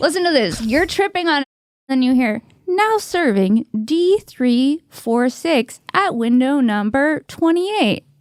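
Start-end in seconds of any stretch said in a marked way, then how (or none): 2.7-8.0 very slow automated public-address announcement voice. Imitating the DMV calling the next number: DMV announcement impression. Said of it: "my D M V impression".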